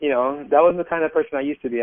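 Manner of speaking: ordinary talk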